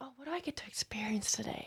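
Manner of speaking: high, soft whisper full of wonder.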